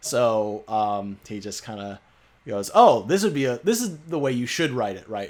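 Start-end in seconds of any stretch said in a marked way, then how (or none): 2.7-5.3 dripping sarcasm with swooping sing-song tune. Retelling how a channel host gives wrong writing advice: imitating a sarcastic tone. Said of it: "he says it sarcastically".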